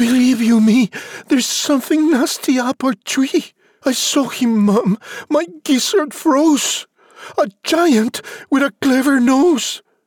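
breathless, frightened gasp, voice very high. Having climbed down fast from the tree, he tells his mother, gasping, frightened. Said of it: "he gasped".

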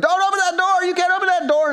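mock, very high-pitched, loud shout. Retelling a school drop-off, reenacting yelling at a kid in the car. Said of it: "so I'm yelling at him".

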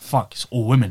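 ordinary talk

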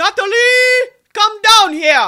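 very high, loud, shrill, drawn-out holler. Speaker imitates a friend's mom yelling for her daughter, Josette impression, yelling. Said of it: "my best Josette impersonation you'll ever hear".

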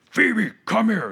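mocking, high-pitched yell. Retelling how dad called the puppy over: imitating dad yelling at dog. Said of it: "And he yells at the dog".

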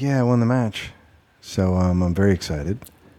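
put-on dull, flat, uncharismatic voice. Imitating Andy Murray as a dullard who is not charismatic: dull Andy Murray impression. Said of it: "he's just not charismatic".

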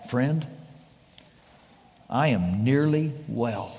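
weak, effortful, labored half-whisper, low in pitch. Speaker retells a dying man's reply to a visiting friend, in a labored half-whisper. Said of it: "in a labored whisper".

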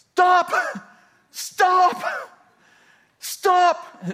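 put-on very high, loud yell. Recounting running after a man on a lawn tractor, retelling a yell. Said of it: "I'm yelling".

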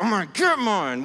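teeth gritted, determined. Leading the audience in a repeated phrase, the speaker says it determined, through gritted teeth. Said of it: "grit your teeth a little bit".

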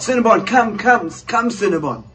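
mock high shout, calling out across a distance. Retelling chasing cinnabon up the road and calling after her, retelling own shout. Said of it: "I shout".

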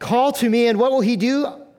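plain

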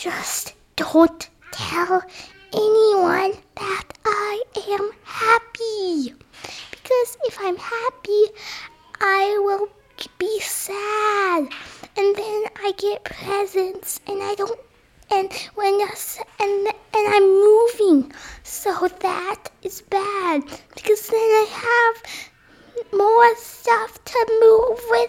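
soft, hushed whisper under the breath.

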